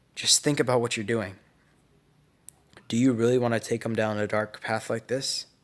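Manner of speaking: ordinary talk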